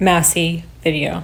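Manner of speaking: usual speaking voice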